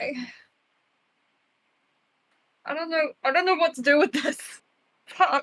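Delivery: really crying through the words. A player reacts to hearing Gideon can get out of his pact: crying. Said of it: "I'm legit crying right now".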